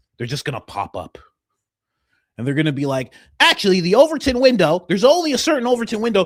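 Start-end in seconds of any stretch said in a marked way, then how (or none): 3.4-6.3 squeaky, very high, shrill, loud commentator voice. Imagining a new pundit who replaces Ben Shapiro: imitating a Ben Shapiro-like pundit. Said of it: "What's with this guy's voice?".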